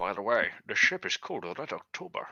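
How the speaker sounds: put-on strong, thick Scottish accent. During a role-play, a player in character names the ship: thick Sean Connery accent. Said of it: "with a thick, thick accent".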